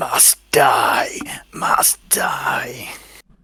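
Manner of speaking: very slow, unearthly, breathy inhuman whisper, near crying. Voicing a creature that cries out: weird inhuman voice. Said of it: "in a weird, like, inhuman voice".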